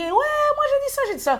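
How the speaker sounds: mock shouting. Recounting an argument with a woman, retelling a shout. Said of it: "elle a commencé à crier".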